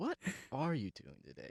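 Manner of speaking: quiet, soft voice.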